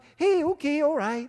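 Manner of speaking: amiable, easygoing, friendly voice. Acting out someone's good cop, bad cop routine: mock-friendly good cop voice. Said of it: "And he's very friendly".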